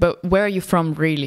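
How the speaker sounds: ordinary talk, nothing marked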